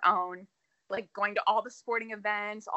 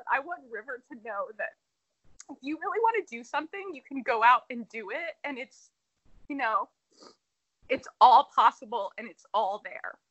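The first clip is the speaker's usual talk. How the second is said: moved, emotional, heartfelt voice; 3 semitones higher, 5 dB louder than usual. Speaking about a woman she admires, emotional. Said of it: "I'm getting so emotional about this".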